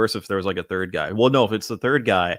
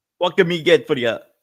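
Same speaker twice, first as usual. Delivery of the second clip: mangled, high-pitched put-on Scottish accent; 8 semitones higher, 4 dB louder than usual. Trying out an accent for a line, and it comes out Scottish-sounding. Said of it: "that sounded just more like Scottish there".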